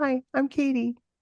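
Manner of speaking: put-on tiny, small, high little-girl voice. Retelling her introduction to a man holding her close, in a little voice. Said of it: "I say in this little voice".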